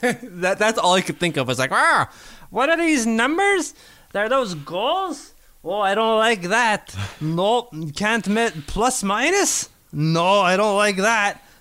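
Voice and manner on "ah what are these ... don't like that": put-on old man voice, slow, pitched up. Recalling own reaction to confusing numbers: put-on old man voice. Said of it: "That's my old man accent".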